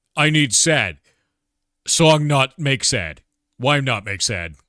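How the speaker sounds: loud, high caveman voice with broken, simple speech. Retelling asking Stein for a game music track, talking like a caveman. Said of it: "like a like a caveman with a stick and a stone".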